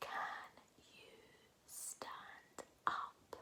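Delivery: slow, very quiet, very soft whisper. Leading a repeat-after-me sentence practice, this time in a whisper voice. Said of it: "Let's do it in a whisper voice this time".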